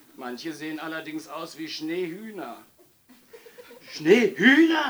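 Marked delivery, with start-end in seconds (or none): 3.9-4.9 very high-pitched, very loud gasp. The mayor reacts to a policeman's report, gasping. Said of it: "Japste der Bürgermeister".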